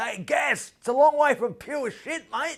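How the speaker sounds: yelled, high and loud. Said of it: "yells out".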